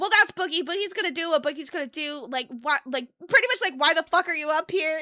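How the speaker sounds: rude, loud, hostile, dismissive tone. Retelling a dismissive answer to the caller: imitating a hostile dismissal. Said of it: "Xylee was on one for that".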